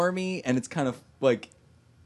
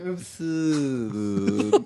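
smarmy put-on voice; 3 semitones lower than usual. Retelling what Nicky says about living forever: smarmy Nicky impression. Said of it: "he's being very smarmy about this whole thing".

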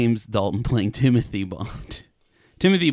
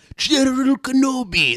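put-on cyborg villain voice, higher. Trying the impression again, a better General Grievous voice. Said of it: "that's a better one".

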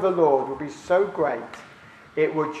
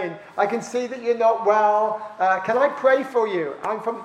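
put-on sunny voice, higher pitched; 5 semitones higher than usual. Retelling how a team member greeted a woman in a supermarket: very sunny way. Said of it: "in a very sunny way".

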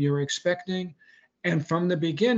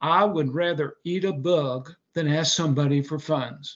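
imitated put-on Southern drawl. Quoting what a Southern gentleman once said to you, in a Southern drawl. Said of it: "in his beautiful Southern drawl".

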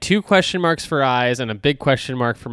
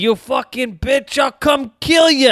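put-on New Jersey accent, much higher, faster; 11 semitones higher, 3 dB louder than usual. Comparing voices, the speaker quotes a line as Chucky in a thick New Jersey accent. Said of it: "he's a thick New Jersey accent".

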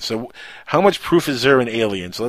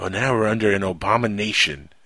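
normal talking voice

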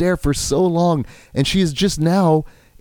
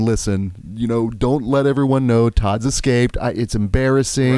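normal talking voice

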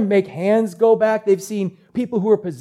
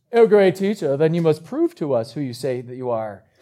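snobby tone in a deep voice; 5 semitones lower than usual. Telling the story, voicing the Pharisees challenging the teacher: snobby Pharisee voice. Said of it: "That's my snobby Pharisee voice".

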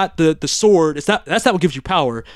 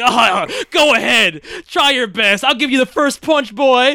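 put-on villain voice, laughing while talking, higher; 7 semitones higher than usual. Retelling a villain's taunt to a cornered hero: imitating Skeletor laughing while talking. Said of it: "he's laughing like".

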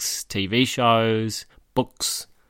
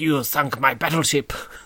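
vague put-on Eastern European, Russian or Hungarian accent; 3 semitones higher than usual. Imitating a character's line from a movie: imitating a russian or hungarian accent. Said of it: "maybe Russian or Hungarian or something".

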